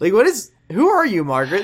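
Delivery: mock, exasperated outburst.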